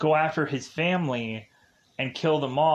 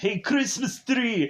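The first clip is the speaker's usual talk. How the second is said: put-on Austrian accent, much higher; 8 semitones higher than usual. Recounting a movie scene to listeners, doing an Arnold accent. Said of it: "that's my Arnold accent".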